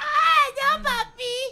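put-on high anime girl voice. Joking about how girls would sound in Mexican animes: Mexican anime girl voice. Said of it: "all the girls sounded like".

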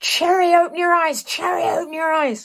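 loud, high-pitched shouting.

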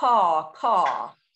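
put-on crow-like cawing in a Southern accent. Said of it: "caws with a nice Southern accent".

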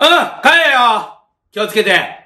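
sudden, loud, high-pitched outburst. Saying goodbye to a visitor who promises to come again, suddenly loud. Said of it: "急に声でかい".

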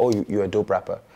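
plain

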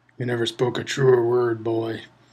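dry, wry, level deadpan delivery. Someone sitting behind a boy mutters a remark to another man: muttered dryly. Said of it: "someone muttered dryly".

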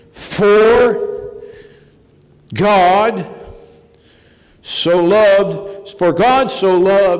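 mock slow, agonized reading. Retelling how a man's father read the Bible, imitating slow, agonized reading. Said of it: "he went slow and agonized".

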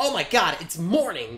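mocking, annoying teen gamer exclaiming voice. Describing a type of player, a speaker is imitating a 13-year-old gamer kid. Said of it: "Like a 13-year-old gamer kid".

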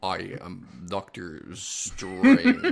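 bad American accent, swooping, slow, drawn out. Mocking an actor's accent in a film: Benedict Cumberbatch's bad American accent. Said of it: "how bad that accent, uh, was from Benedict Cumberbatch".

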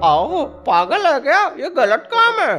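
very high, goofy cartoon character voice.

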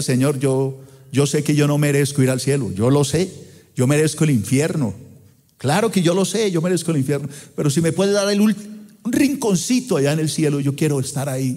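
plain

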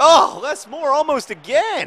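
very high, very loud, swooping excited outburst. Reacting to a near goal chance while talking: getting excited. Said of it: "sorry, I'm getting excited".

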